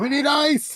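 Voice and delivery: very high, shrill, loud, urgent shriek. Voicing a character dragging an ally toward closing doors: screaming in character. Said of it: "As I'm screaming and trying to drag Lark".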